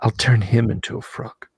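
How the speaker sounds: barely audible whisper, very close. Game master voices Yancey whispering into a player's ears, whispering. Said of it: "Yancey like whispers into your ears".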